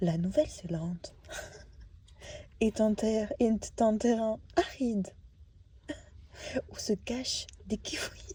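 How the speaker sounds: soft, cultural-channel documentary narrator voice-over. Recording a voice-over, showing how not to sound: Arte documentary voice. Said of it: "Et pas en mode Arte".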